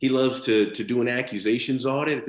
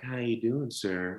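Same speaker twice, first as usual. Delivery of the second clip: sultry, sexy, slowed-down, quieter voice; 7 dB quieter than usual. Showing how slowing down can come across wrong: sultry, sexy slowed-down voice. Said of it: "sexy because you're slowing down, like".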